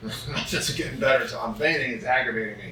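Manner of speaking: ordinary talk, nothing marked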